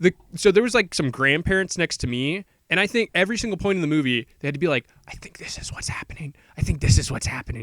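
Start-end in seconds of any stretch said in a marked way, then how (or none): 5.1-7.6 hushed, whispered murmur aside. Retelling how grandparents in the theater talked: imitating someone whispering. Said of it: "whispering to each other".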